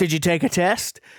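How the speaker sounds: high, mock playful joking tease. Retelling how they asked her about a test: imitating own joking question. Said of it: "I jokingly was like".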